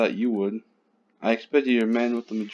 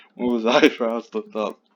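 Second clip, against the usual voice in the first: normal talking voice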